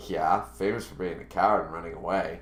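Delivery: nonchalant, lazy, careless, can't-be-bothered delivery. Imagining how she might have said the line: imitating someone lazily. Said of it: "went like lazily".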